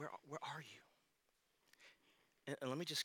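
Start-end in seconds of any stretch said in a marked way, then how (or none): 0.0-0.8 hushed, soft, grieving, heartbroken pleading voice. A speaker reads God's words to Adam as a heartbroken father. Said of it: "I read it as a heartbroken father".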